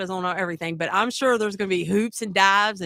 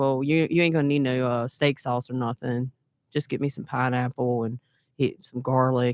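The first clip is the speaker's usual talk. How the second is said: mock-sad tone, lower pitch; 8 semitones lower than usual. Retelling what he asked for instead of steak sauce: imitating someone acting sad. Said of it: "and just all sad acting".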